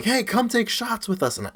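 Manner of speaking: high-pitched, shouted yell. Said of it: "someone would yell to my mom".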